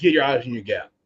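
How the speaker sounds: ordinary delivery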